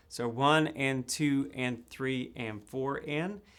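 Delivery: slow, steady counting aloud on the beat.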